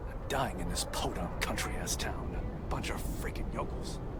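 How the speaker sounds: low, soft grumble under the breath.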